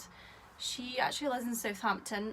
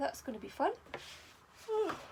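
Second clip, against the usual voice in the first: words spoken through a yawn; 4 semitones higher than usual. Chatting about gifts received, speaking through a yawn. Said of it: "I'm yawning".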